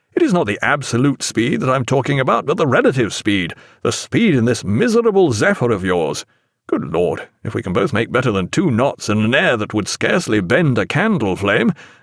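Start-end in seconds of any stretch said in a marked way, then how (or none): none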